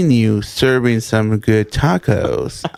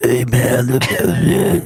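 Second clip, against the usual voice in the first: slow voice of a thirty-year smoker. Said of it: "it sounds like I've been a smoker for thirty years".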